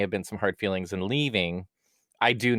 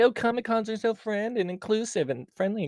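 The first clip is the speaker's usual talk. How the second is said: very high, fake-sweet sarcastic gushing; 13 semitones higher than usual. Quoting what everyone says about Comic-Cons: imitating others sarcastically.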